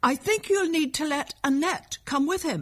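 high, carrying shout. Amid a noisy row, a man calls to Grandmother, shouting over the din. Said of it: "he shouted to Grandmother".

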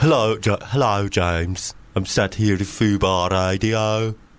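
put-on Birmingham, England accent. Asked on a radio show to try an accent, doing a Birmingham accent. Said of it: "Birmingham, England".

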